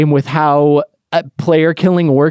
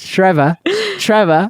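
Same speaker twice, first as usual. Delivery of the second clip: put-on British accent; 4 semitones higher than usual. Speaker imitates how a man who loves his videos addresses him, British accent. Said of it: "This is how he talks to me".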